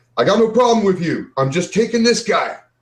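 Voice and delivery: high, loud, hollered yell. Player's character, seeing someone take aim at him, yells out: yelling out. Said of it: "I'm yelling out".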